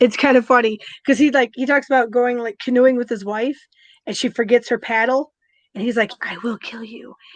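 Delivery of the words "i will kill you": hushed, whispered under the breath. Retelling a comedian's bit about his wife forgetting her paddle: retelling a whispered threat. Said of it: "why are you whispering it?".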